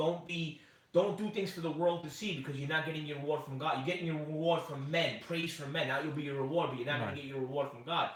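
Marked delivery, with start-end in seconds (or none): none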